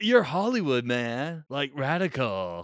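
put-on California surfer-dude voice. Imitating how a guy they're discussing talks, in a California dude voice. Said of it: "He kind of talks like this".

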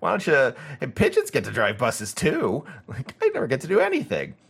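high, swooping pigeon voice. Showing the voice used for the book's pigeon: pigeon voice. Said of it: "the voice I always do for him".

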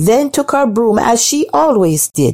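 ordinary delivery

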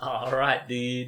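loud, bad German accent drifting into Swedish. Repeating a friend's line to try the accent, bad German accent. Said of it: "That came out in Swedish".

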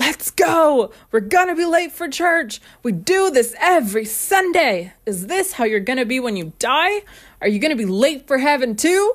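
barking, loud, high drill-sergeant yell. Recalling a 17-year-old rushing everyone to church, retelling a drill-sergeant yell. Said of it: "yelling like a drill sergeant".

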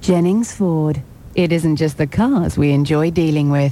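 faintly alluring, suggestive, slightly seductive ad-read delivery. Voicing an advert line for jennings ford, slightly seductive. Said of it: "Why does she say it in a slightly seductive".

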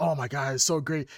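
ordinary talk

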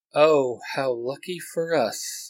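dry, wry, droll, very slow delivery. Reading a fan story aloud, a character's reply: droll voice. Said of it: "Eric replies in a droll voice".

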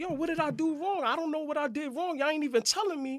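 put-on yelling. Retelling how a man yelled at the people attacking him, retelling his yelling. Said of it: "he's yelling at them like".

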